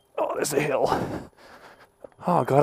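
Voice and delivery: straining, out of breath. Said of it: "I'm feeble and out of shape".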